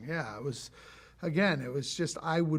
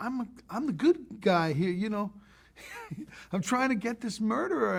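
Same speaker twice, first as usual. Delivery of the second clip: confounded, baffled voice, pitched up high; 7 semitones higher than usual. Retelling Forest Whitaker's complaint to the speaker: imitating confounded Forest Whitaker. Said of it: "not angry, confounded".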